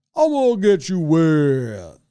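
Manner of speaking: very slow, drawn-out, swooping cartoon character voice. Describing a water toy that tipped over, cartoon voice. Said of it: "it was like a cartoon voice, so it'd be like".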